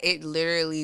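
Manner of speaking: ordinary talk, nothing marked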